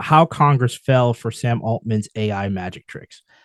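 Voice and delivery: plain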